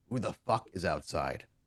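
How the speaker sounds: really tired, weary, hushed, very gravelly voice. A voice from inside answers the visitor waiting outside, really tired, gravelly voice. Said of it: "a really tired, very kind of gravelly".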